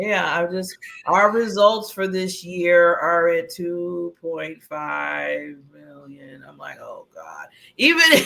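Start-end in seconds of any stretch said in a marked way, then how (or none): 0.2-6.4 mock flat monotone voice, slower pace. Complaining about leaders who don't get it, then doing one: mock monotone leader voice. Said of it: "another monotone like leader".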